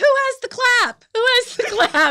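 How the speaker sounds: shrill, very high, very loud yell. Retelling calling out on stage to get people to give: imitating own past yelling. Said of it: "yelling out".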